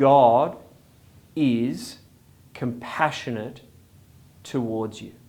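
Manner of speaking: slow, deliberate, halting, word-by-word emphasis. A speaker repeats a statement to listeners so it sinks in, said even slower. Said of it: "I want to say it even slower so it sinks in".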